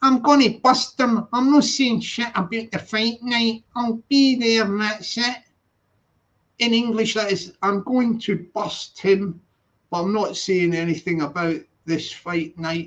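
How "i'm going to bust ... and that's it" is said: lines delivered in a put-on Scottish accent. Quoting someone before translating it into English, in a Scottish accent. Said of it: "I'll do the Scottish accent".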